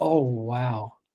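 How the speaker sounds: very low, dropped late-night fm radio dj voice. Speaker shows active listening by dropping his voice an octave: late-night FM DJ voice. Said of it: "So it's when you drop it down an octave".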